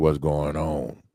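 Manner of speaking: low, rough voice like gravel in the throat. Recalling a coach who phoned him every day at work: imitating Coach Wonder's rocks-in-throat voice.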